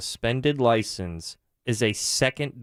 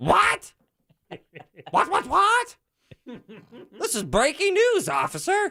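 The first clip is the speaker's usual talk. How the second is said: terrible, very high-pitched squawking voice. Joking about a traffic stop with an officer: bad Jim impression. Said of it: "I gotta work on my Jim impression".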